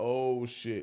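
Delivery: plain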